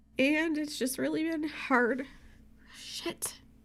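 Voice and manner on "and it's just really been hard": high, tearful voice crying through the words. Speaker talks about missing their old dog, crying. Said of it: "I'm just crying now".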